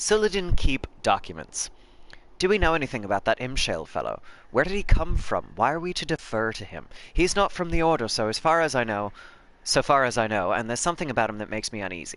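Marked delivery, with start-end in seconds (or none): 2.4-12.2 put-on character voice with an Irish accent. Voicing a character during a nightmare-mode game session: random Irish accent. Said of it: "that random Irish accent".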